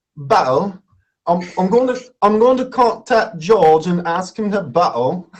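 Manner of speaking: attempted English accent. Someone gives the speaker words to say; english accent. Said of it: "I want to hear your best English accent".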